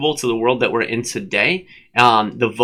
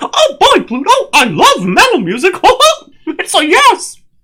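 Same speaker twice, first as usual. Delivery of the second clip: high-pitched, bouncy, squeaky voice; 6 dB louder than usual. Giving someone's answer when asked for her thoughts, in a Mickey Mouse voice. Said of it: "I can't break from the Mickey Mouse voice for her".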